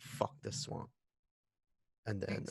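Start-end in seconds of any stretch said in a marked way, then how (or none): 0.0-0.9 quiet mutter under the breath, quieter. Playing a character lowering his weapon after a mercy kill: muttered under his breath. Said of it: "under his breath".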